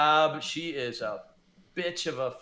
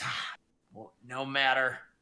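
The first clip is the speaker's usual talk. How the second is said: whispered dying witch voice, slower; 2 semitones lower than usual. Narrating a dying witch speaking only to one listener's character, dying witch whispering. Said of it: "She's whispering to you".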